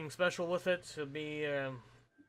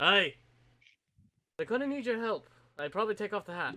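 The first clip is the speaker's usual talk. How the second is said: put-on woman's voice, pitched up; 5 semitones higher than usual. Game master voicing a woman sitting at a table, in a woman's character voice. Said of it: "you hear the woman go".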